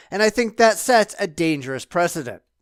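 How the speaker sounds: ordinary talk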